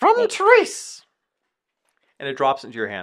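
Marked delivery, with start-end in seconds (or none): 0.0-1.0 croaking bird voice, higher and louder. Voicing a raven delivering a message to a player: raven voice. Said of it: "talk in a raven voice".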